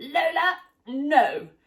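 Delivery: put-on shouting. Retelling how she stops Lola from gobbling something down; retelling a shout. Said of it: "I just shouted at her".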